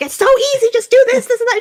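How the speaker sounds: very high-pitched, loud shouting. Acting out Tail instructing Huo Huo: imitating Tail yelling. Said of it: "Tail is just yelling at her like".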